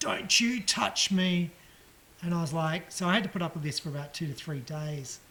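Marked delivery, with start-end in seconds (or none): 0.0-1.5 slow stretched-out yelling. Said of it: "she'd yell out and she'd go".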